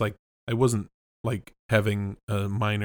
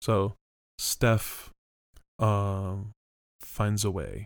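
very slow, halting, um after the first word. Retrying the line with the um after the first word: Jeff Goldblum voice. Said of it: "my Jeff Goldblum voice".

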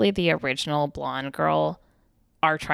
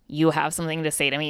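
ordinary talk

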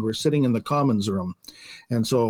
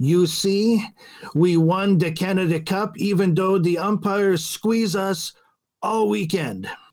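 put-on very thick, heavy French accent, pitched up; 7 semitones higher than usual. Retelling what Joel said on entering the room, imitating Joel's thick French accent. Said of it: "he says in his very thick French accent".

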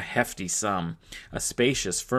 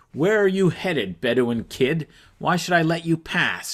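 menacing, threatening, raised and high voice; 8 semitones higher, 5 dB louder than usual. A mounted woman with a spear challenges a young rider; menacing. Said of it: "she asked menacingly".

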